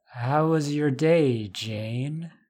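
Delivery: slow drawl, vowels long and stretched. Narrating jane's mother speaking to jane without turning around: drawling. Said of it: "she drawled".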